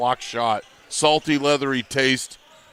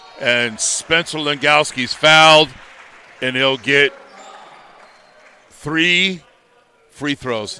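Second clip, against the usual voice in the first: very slow, each word stretched and drawn out; 4 dB louder than usual. Basketball announcer calling a foul and three free throws, said real slow. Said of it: "Notice how I said that real slow".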